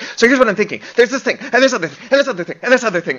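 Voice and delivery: acted, very high, frantic rattled-off rush. Show how your writing partner talks about what you're writing, imitating Ben talking frantically.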